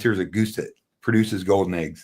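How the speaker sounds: ordinary talk, nothing marked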